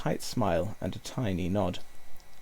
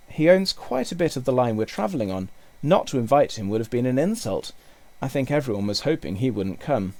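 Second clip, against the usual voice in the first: plain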